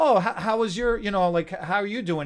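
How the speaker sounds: imitated cheery, happy tone. Retelling how clients greeted them on arrival: imitating a cheery, happy client. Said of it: "they'd come in all cheery and happy".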